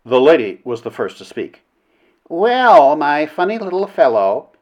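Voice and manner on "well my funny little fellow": pitched-up, heavily sarcastic, dripping with sarcasm. The lady is first to speak, addressing Flynn: with a good deal of sarcasm. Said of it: "she remarked, with a good deal of sarcasm".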